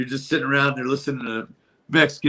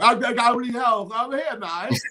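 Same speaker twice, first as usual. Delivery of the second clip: put-on Cockney London accent; 10 semitones higher than usual. Describing liking how guys with a Cockney accent talk, imitate a Cockney accent. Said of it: "that Cockney accent, the way they talk".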